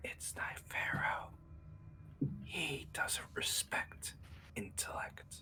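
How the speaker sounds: slow, hushed, confiding whisper. A character leans in to a silent listener and speaks into his ear, whispering. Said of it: "Good angel".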